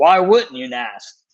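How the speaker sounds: shouting. Retelling what an injured player yelled across the medical room: imitating someone yelling. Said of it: "he yells over".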